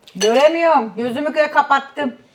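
shouting, high and loud.

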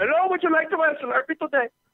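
very high-pitched, horrible, bad Indian accent. Joking around on a podcast, a host tries a bad Indian accent. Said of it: "No India calls for us now".

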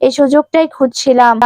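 ordinary delivery, nothing marked

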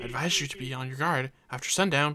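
speaking quietly. Reading a villager's warning aloud from a game: lowered voice. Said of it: "Lowers his voice".

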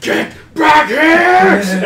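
very loud, high, piercing, drawn-out scream. Voicing the Inquisitor chasing the fleeing players: screaming. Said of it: "a scream, like".

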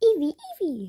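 loud, high-pitched squeal. Showing a Pokemon plushie called Eevee: Eevee impression. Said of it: "That's my impression of Eevee".

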